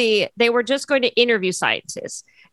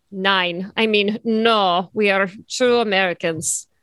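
put-on Russian-sounding accent; 3 semitones lower than usual. Voicing postwar Germans answering the press, in a Russian-sounding accent. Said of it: "I have Russian accents yet again".

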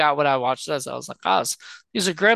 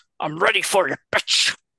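put-on possessed demon voice; 2 semitones higher than usual. Describing a movie scene where a little boy suddenly speaks: demon voice from the game. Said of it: "has that demon voice from the game".

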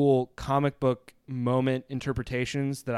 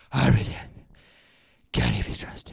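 rough, creaky voice grinding the words out. Talking about the Batman voice with co-hosts, a speaker does the Batman voice. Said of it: "Let's talk about the Batman voice".

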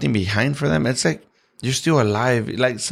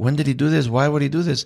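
mock weepy, tearful voice, speaking through crying. Imagining relatives finding a goodbye video after a death: acting out crying. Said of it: "they're gonna start crying".

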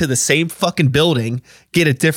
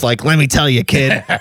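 put-on voice talking around a cigar. Describing modern theme parks' attitude, a speaker imitates someone with a cigar-in-mouth voice. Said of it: "This total like cigar in my mouth".

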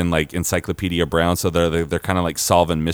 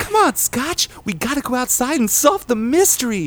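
urgent, very high-pitched voice calling out. Describing a planned show, voicing Timmy calling to Scotch: very high Timmy voice. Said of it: "he's got a very high voice".

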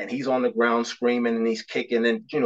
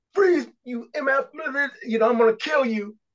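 mock shrill, very high-pitched wild screaming; 13 semitones higher than usual. Retelling how a fellow officer screamed at a suspect: imitating someone screaming. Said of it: "screaming at him".

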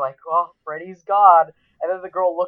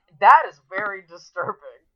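usual speaking voice

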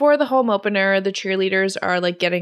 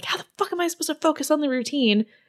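play-acted high, angry snap; 8 semitones higher, 3 dB quieter than usual. Retelling a film scene where a cheerleader snaps at the captain: imitating someone snapping angrily. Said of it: "snaps at her a little bit".

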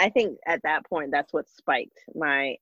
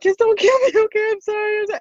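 mock very high, rushed, tearful, crying pleading; 5 dB louder than usual. Retelling what was said to a police officer, retelling tearful frightened pleading. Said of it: "I instantly just started crying".

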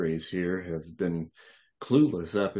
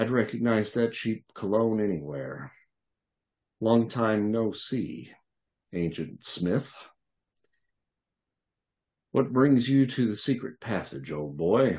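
dryly amused, wry, dry-humored. Narrator voicing the sage addressing the babysitter, speaking with dry humor. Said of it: "he speaks in a voice infused with dry humor".

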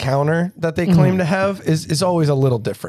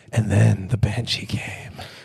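very low, eerie, spooky storytelling voice; 8 semitones lower, 3 dB quieter than usual. Teasing the storyteller about his reading voice: imitating Kyle's spooky voice. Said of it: "Your spooky voice?".

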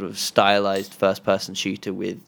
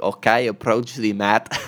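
put-on Finnish accent blended with Scottish and American. Retelling a gun instructor's range commands, in his mixed Finnish-Scottish-American accent. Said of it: "he had this incredible accent".

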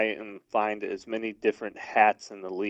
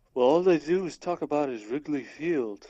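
terrible put-on Irish accent, pitched up; 5 semitones higher than usual. Retelling what a friend from Ireland said: terrible Irish accent. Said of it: "I do a terrible Irish accent".

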